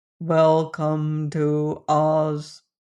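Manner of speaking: flat, dead level monotone with no tune. The narrator reads the Copper Man's line to the group: Copper Man's monotonous voice. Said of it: "in a monotonous voice".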